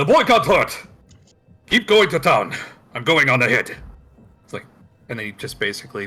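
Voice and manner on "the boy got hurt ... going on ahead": very loud, high-pitched forceful shout. Narrating a game scene, the speaker voices a character who turns and shouts.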